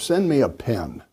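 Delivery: ordinary delivery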